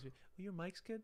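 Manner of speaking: very high-pitched put-on lady voice. Retelling what people said in childhood: imitating a woman's voice. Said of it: "I'm doing my voice".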